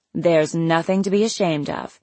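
ordinary delivery

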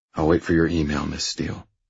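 ordinary delivery, nothing marked

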